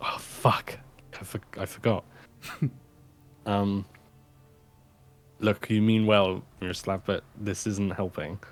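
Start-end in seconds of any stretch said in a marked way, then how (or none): 0.0-2.0 hushed whisper, much quieter. Showing how a line in a kitchen scene should go, in a hushed whisper. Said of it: "with like hush whispers".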